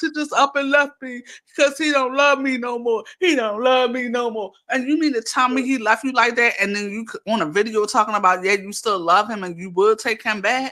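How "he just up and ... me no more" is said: weepy, tearful crying, through tears. Retelling how she begged on live for rent money: imitating her crying on live. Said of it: "you came on live crying".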